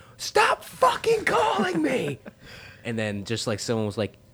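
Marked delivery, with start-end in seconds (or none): 0.2-2.2 high, shrill, swooping, drawn-out scream. Retelling answering what seemed a spam call, acting out the past scream. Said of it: "I just screamed".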